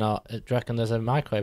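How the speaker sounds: ordinary talk, nothing marked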